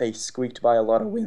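voice breaks partway through the sentence. Podcast host talking hockey, voice cracking. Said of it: "that's the first voice crack".

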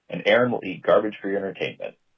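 ordinary talk

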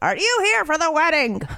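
put-on high-pitched old woman's voice. Retelling what an old woman said at a bar: imitating an old woman.

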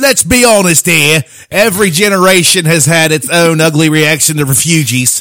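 put-on high, loud English-accented voice.

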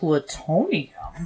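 mocking upspeak, pitch rising on plutonium. Showing how this guy says plutonium, imitating question-like upspeak. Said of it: "He goes".

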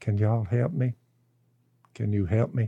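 timid, meek, small little voice. Retelling a woman walking back in to ask for help, imitating a meek little voice. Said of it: "in a meek little voice said".

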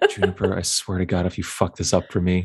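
muttered, grumbling under breath. In a tabletop game, a character threatens another player's character, muttering to himself. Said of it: "Quinny's just like muttering to himself".

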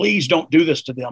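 plain

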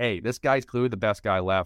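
normal talking voice

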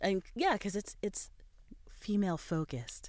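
soft, breathy product commercial voice-over. Describing a show called Deadly Women to a co-host, in a tampon commercial voice. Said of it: "was that your tampon commercial voice?".

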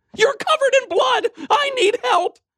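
very high, shrieking, alarmed scream. A young woman in the bedroom doorway, on the phone, screaming. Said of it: "she screamed into the phone".

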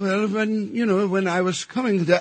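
put-on London-style English accent, laid on. Retelling seeing a co-star on TV: imitating an English accent. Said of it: "Why is he talking like this?".

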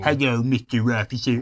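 animated dog voice. Speaker tries the cartoon dog's voice mid-conversation: Droopy voice. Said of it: "I used to be able to do the voice of Droopy".

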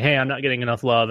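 usual speaking voice

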